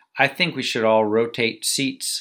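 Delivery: plain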